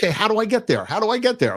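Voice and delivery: frantic panicked pleading. Retelling realizing she went to the wrong airport, retelling panicked words. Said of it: "I'm in panic mode".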